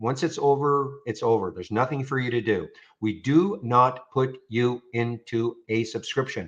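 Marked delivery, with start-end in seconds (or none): 3.0-6.5 very slow, deliberate, drawn out word by word. Answering a common customer question, said very slowly. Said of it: "I like to say it very slowly".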